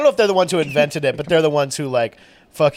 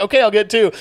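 acted-out nervous, scared, pitched-up, panicky voice; 7 semitones higher, 4 dB louder than usual. Retelling a customer's reply to a shouting worker: imitating a panicked reply.

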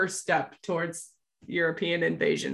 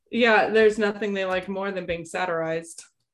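usual speaking voice

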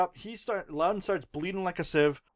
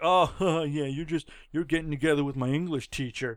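mock aggressive teasing tone, lower pitch; 4 semitones lower than usual. Retelling a movie scene, quoting a boy's jab: imitating aggressive teasing. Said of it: "he's super aggressive on it".

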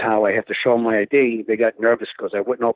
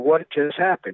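put-on high, demanding yelling; 6 semitones higher than usual. Retelling how another person in the van yelled at the speaker: imitating someone yelling. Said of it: "he's yelling at me".

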